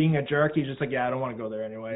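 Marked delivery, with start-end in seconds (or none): 0.9-2.0 quiet, casual, unbothered, nonchalant offhand delivery. Retelling what he said about going to the city: imitating a quiet, nonchalant remark. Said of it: "He just said it so, like, quiet, too, and, like, nonchalant".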